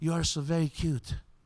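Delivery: put-on slight French accent. Recalling a woman kissing him on the cheek at a party, in a light French accent. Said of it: "said in her little French accent".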